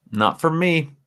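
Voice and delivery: high frog puppet voice. Reacting to a listener's comment about a movie, sound almost like Kermit. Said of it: "That almost sounded like Kermit".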